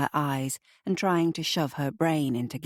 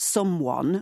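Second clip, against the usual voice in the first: leaning hard on "someone". Anna complains on the phone about unanswered calls, stressing 'someone'. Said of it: "emphasise the word someone".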